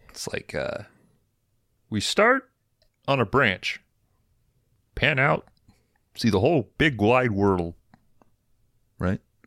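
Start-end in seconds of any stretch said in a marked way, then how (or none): 1.9-9.2 high, froggy puppet voice. Urged by the others to give it a shot, the speaker attempts the Kermit voice. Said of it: "the Kermit voice".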